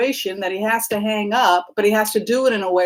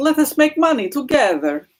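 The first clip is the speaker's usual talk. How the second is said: terrible, bad, put-on Russian accent; 4 semitones higher than usual. During a tarot reading, the reader speaks in a bad russian accent. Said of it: "How's my Russian accent?".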